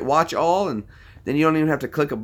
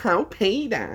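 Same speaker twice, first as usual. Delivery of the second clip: high-pitched cartoon mom voice; 5 semitones higher than usual. Showing which cartoon voices he can do, in a Lois impression. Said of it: "But I can do Lois".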